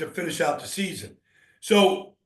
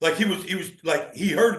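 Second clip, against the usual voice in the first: plain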